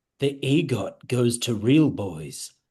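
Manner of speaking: gentle, soft whisper. Leaning down to a groggy character and speaking in his ear: gentle whisper. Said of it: "I wanna lean down and gently whisper".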